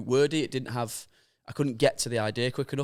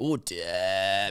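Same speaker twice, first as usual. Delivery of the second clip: drawn-out theatrical put-on voice, lower; 5 semitones lower than usual. Describing a former speaker's catchphrase: John Bercow voice, drawn out theatrically. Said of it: "he used to draw it out like a theatrical way".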